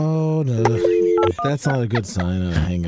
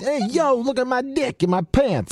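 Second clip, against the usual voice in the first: very high-pitched put-on Italian accent; 13 semitones higher than usual. Joking after a friend mentions Vinnie Barbarino from Welcome Back, Kotter: Vinnie Barbarino impression. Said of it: "the impersonation I was looking for".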